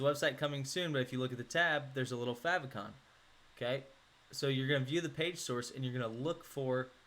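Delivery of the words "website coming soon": plain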